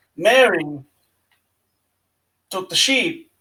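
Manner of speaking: put-on Irish accent. Imagining an actor doing an Irish accent: Christopher Walken doing an Irish accent. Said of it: "with his cadence and the way he's like".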